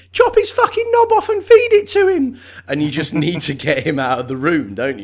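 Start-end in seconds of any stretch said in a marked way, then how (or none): 0.2-2.4 put-on very high, very loud, shrill, angry child's scream. Picturing a small child at the back of the room demanding cruelty: imitating a shouting little kid. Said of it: "a little kid at the back of the room going".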